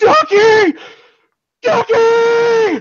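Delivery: big man bellowing, very high, loud, desperate.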